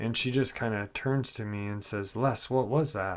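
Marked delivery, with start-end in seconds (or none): 2.2-3.2 alarmed, panicky, panicked voice. Retelling what a little sister said at night: imitating a panicked voice. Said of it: "in a panicked voice".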